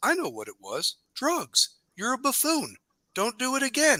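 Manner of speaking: very high, animated coach voice with swooping pitch. Retelling how the coach scolded a bad driving move: imitating the coach. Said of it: "And he says".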